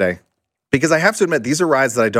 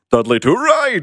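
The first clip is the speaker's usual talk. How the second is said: cartoon narrator voice, announcer-style, much higher; 7 semitones higher than usual. Listing theme park rides, announcing a ride name in cartoon narrator voice. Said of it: "The narrator".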